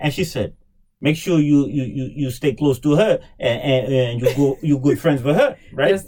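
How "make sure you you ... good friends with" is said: put-on Haitian accent. Retelling what mother said about a classmate: imitating mother's Haitian accent. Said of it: "that's my Haitian accent".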